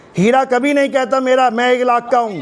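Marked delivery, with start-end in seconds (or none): none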